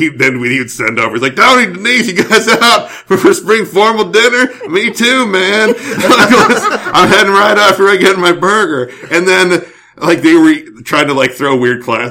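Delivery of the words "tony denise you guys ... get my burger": put-on very high-pitched, slow, stoned skater drawl. Retelling what a high skater guy said at a restaurant: imitating a high skater guy. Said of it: "kinda high skater guy".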